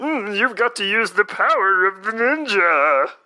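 high, heroic cartoon hero voice with stretched words. Quoting Ninjor's line about ninja power, in Dudley Do-Right voice. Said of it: "Ninjor is 100% Dudley Do-Right, where he's like".

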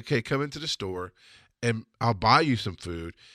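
plain

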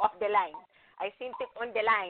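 put-on Cuban accent. Speaker quotes their father's phrase, imitating his cuban accent. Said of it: "in his Cuban accent".

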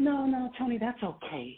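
terrible put-on voice, very slow, every word stretched. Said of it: "that's my terrible [name] voice".

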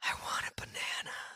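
put-on whispered, half-murderous, menacing toddler voice. Retelling being woken up by a 3-year-old, imitating a menacing creepy whisper. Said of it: "whispering in like the most menacing, creepy, just like half murder type of".

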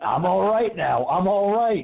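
high, stretched-out, drawn-out screaming. Retelling a movie scene where Ash keeps saying he is all right: imitating Ash screaming. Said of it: "he's screaming".

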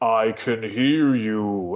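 very slow, menacing, ominous voice. Retelling a voice heard over Skype while live on screen: imitating an ominous voice. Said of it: "there was this ominous voice".

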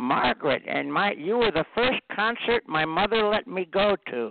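high-pitched put-on old lady voice.

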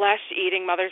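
ordinary talk

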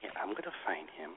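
mock soft threatening tone. Imitating a woman who threatens softly instead of yelling; mock soft threat. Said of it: "A threat with a soft voice".

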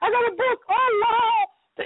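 put-on very high, happy little-kid voice. Acting out a little kid who is happy to get a book, imitating a happy little kid. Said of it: "she's happy".

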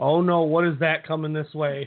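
dead-calm, low, flat monotone with alarm. Describing someone in a haunted house, imitating her flat calm monotone. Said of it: "She is like the most monotone freaker outer I've ever heard".

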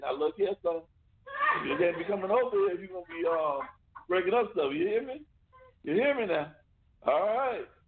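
put-on old man voice. Retelling what he told his son's friend who broke something, speaker uses a put-on old man voice. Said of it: "I'd put on that old man voice".

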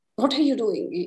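acted severe, strict, stern headmaster-style delivery. Imitating a harsh inner voice like a strict headmaster. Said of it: "This voice was very Hierophant type ... the very strict one".

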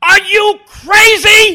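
very high, very loud, shrill scream, wildly drawn out. Act out Shelley picking up the phone, convinced Randy is doing Cosell again, imitating someone screaming. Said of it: "is screaming at Cosell".

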